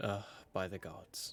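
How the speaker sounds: ever so quiet, faint whisper under the breath. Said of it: "Just ever so quietly".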